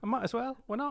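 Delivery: put-on British accent, high-pitched.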